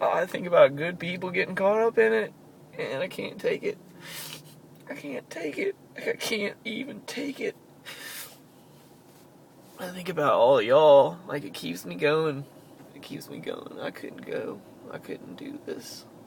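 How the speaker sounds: tearful, breaking voice. Speaker addressing the audience, crying with voice breaking. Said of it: "I'm sorry about the crying".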